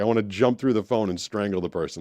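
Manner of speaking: normal talking voice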